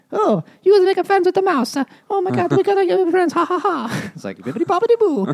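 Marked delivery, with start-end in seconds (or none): 0.1-3.3 high put-on Italian accent, little mouse voice. Describing a story's mouse character, in a mock italian mouse voice. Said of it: "Because they sound Italian".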